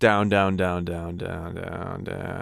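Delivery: falling into vocal fry. Teaching singers to reach fry from chest voice, pitch falling into vocal fry. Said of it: "Removing support uh, as you go down in pitch".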